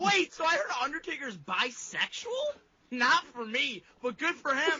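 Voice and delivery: very high yell with the voice cracking. Asked to read a message out with full effort: yelling, voice cracking. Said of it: "your cracking ass voice, ... you're yelling about this".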